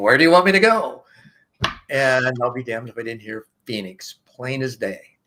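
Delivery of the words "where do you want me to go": put-on near scream, higher and louder. Retelling calling out to the sky on the porch: imitating almost screaming. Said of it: "it's almost screaming".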